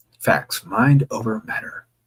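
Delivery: ordinary delivery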